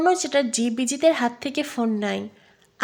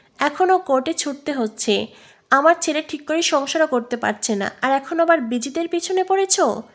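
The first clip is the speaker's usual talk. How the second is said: plain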